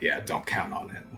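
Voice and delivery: low-pitched muttering. Revel answers a companion's offer, muttering under his breath. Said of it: "You hear Revel mutter under his breath".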